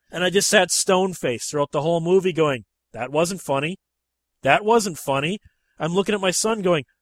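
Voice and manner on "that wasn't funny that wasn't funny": plain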